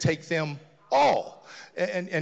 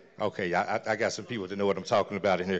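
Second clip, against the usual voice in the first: normal talking voice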